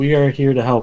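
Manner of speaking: extremely dead, flat monotone voice. Player's character knocking on a house door: most monotone voice ever. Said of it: "say in the most monotone voice ever".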